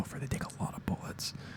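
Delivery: quiet whisper. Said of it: "Let's be real".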